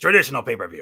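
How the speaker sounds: big, loud, booming wrestling promo announcer voice. Showing how he says it about the network and pay per view, in a McMagma voice. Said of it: "in my McMagma voice".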